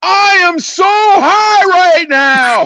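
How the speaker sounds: mock very high, slowed-down, drawn-out screaming. Retelling going inside with the mic on: retelling own scream. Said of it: "I just start screaming".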